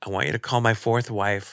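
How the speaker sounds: ordinary delivery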